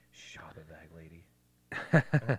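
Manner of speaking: low, slow whisper.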